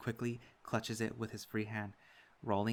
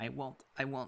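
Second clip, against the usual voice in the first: small, wobbling, quivering, trembling voice; 3 semitones higher than usual. Reading a fight scene, the pinned opponent answering: quivering voice. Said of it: "he quivers out in".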